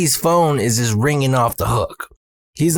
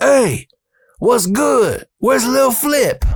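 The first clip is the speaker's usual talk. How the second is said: very high, shrill hollering yell; 11 semitones higher than usual. Storyteller acts out someone from the venue opening the door, retelling a yell. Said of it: "opens the door and yells".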